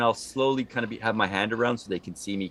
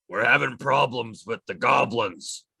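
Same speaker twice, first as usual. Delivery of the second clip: put-on hobgoblin creature voice speaking goblin language. Showing how they will sound speaking Goblin, hobgoblin voice speaking Goblin. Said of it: "The best I can to sound like hobgoblin speaking goblin".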